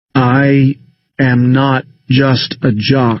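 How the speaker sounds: slow, clearly enunciated. Speaking into a silent room with eyes closed: slow and distinct. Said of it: "I say slowly, distinctly".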